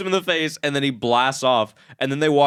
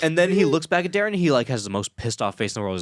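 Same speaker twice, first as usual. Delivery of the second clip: ordinary talk, nothing marked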